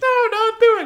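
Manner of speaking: wimpy pleading, very high, loud crying voice.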